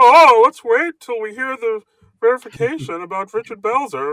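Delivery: very high cartoonish voice. Imitating commenters demanding verification: Marvin the Martian voice. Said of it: "that's what they sound like".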